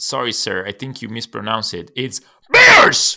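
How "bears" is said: very high, very loud, excited screaming. Correcting someone's pronunciation of the game name, screaming Bears. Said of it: "Jackie screaming".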